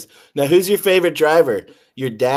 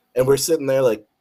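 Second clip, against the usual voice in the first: ordinary talk, nothing marked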